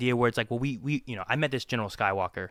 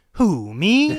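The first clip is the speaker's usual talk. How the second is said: mock sarcastic, sassy retort, very high and loud; 9 semitones higher, 7 dB louder than usual. Retelling a character's reply from a book: imitating a sassy, sarcastic reply. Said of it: "so sassy and sarcastic".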